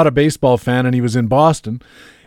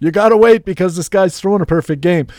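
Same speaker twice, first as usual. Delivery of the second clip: yell with the voice lifted; 5 semitones higher than usual. Retelling yelling back at family during a perfect game: retelling own yell back. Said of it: "I'm yelling back".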